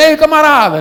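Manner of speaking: loud, high calling shout. Retelling calling out to a man lying in the road: imitating own shout. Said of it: "eu gritando".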